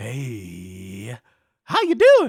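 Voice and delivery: very slow, very loud, booming, swooping, drawn-out gnome voice. Voicing a giant spider answering a Speak with Animals greeting: gnome-like voice. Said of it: "Sounds like a gnome".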